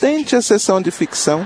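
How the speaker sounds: high-pitched, sarcastic tone. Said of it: "respondeu com sarcasmo".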